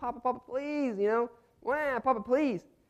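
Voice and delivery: put-on very high, sobbing, pleading baby wail. Recalling the baby crying in her crib, the father imitates her: imitating baby crying. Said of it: "she's just crying like".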